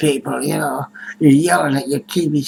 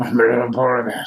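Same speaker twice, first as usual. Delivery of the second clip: too big, grizzly-like bear voice; 4 semitones lower than usual. Trying out a voice for a little polar bear character: big grizzly-like bear voice. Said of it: "Sounds too big and grizzly-like".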